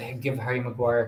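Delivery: normal talking voice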